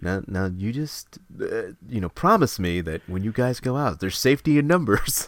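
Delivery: fatherly police officer voice. Retelling a movie scene where a cop scolds kids: imitating a fatherly cop. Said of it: "turns into a, a father figure".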